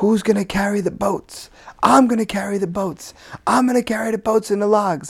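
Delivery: very high, pumped-up, self-hyping shout. Speaker acts out a man pumping himself up mid-workout, retelling a shout. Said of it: "And he's shouting".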